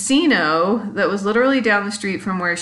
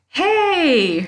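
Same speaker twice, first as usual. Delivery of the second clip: hey called out high. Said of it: "the guy yelled out the window".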